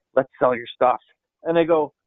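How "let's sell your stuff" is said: put-on whisper, lower pitch. Retelling what Mike said at the end of the presentation: imitating someone whispering. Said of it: "he whispers in my ear".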